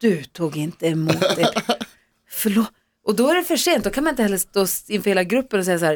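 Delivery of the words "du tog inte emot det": put-on very slow, judgmental, condemning tone. Retelling how a coworker reacted to an undeserved prize: imitating Hans, condemning. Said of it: "när han tittade på mig så här fördömande".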